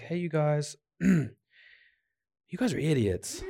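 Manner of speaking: mock understated offhand tone. Imitating Paul telling the believers they are idiots: low-key Paul imitation. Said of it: "in, like, a low-key way".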